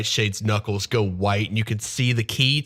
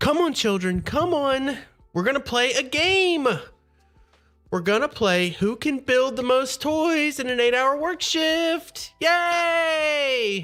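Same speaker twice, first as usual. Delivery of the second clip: very high, slow, deliberate, long drawn-out coaxing. Voicing Granny Nightshade herding children into a workshop: Granny Nightshade voice. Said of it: "She says".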